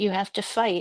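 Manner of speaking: normal talking voice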